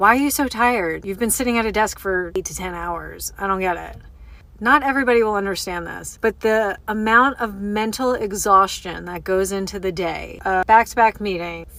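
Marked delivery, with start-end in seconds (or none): none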